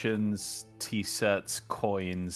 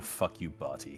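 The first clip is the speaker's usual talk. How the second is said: quiet muttering under the breath; 5 semitones lower, 7 dB quieter than usual. Acting out pocketing a found shard, muttered under breath. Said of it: "under my breath".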